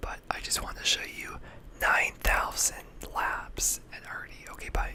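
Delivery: very quiet, soft, hushed whisper. Speaking to viewers while their girlfriend is asleep next to them, whispering. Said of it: "I'm whispering because my girlfriend is asleep".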